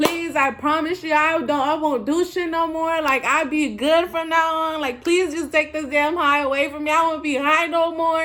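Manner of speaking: crying, tearful, desperate pleading and begging. Retelling praying to Jesus while high, reenacting desperate tearful begging. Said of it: "I'm begging on my knees".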